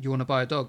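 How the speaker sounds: plain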